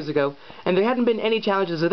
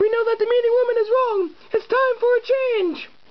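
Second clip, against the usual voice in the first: very high, earnest, forthright, outspoken voice. Narrator reads a woman's answer in a story, forthright woman crying out. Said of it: "And, since she was a very forthright person, / "I'm twenty-seven, I'm a woman, / I'm a woman, / "I'm twenty-seven".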